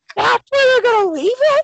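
high, loud, hollered, can't-believe-it yell. Retelling how a nine-year-old reacted when the movie stopped for intermission, retelling a yell at full volume. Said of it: "At the top of his lungs".

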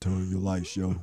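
very deep, straight voice, as deep as it goes. Retelling what a man said instead of squeaking: very deep voice. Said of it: "He hit you with a straight, deep voice. He said as deep as he could get".

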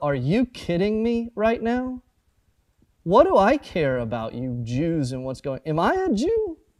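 scornful, contemptuous, swooping, disdainful condescension. Acting out a reply from a bible passage, imitating condescending disgust. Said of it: "all the condescension you can possibly put in it".

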